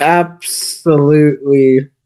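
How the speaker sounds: unpersuasive, lukewarm, half-hearted and unconvincing. Answering whether to recommend it to others, in an unconvincing tone. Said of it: "how you said that is not really convincing".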